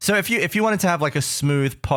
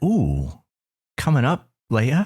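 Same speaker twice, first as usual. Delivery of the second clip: low, smooth podcast-host voice; 5 semitones lower than usual. Podcast hosts try out smooth voices, and one demonstrates: smooth podcast voice. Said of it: "a little bit of that".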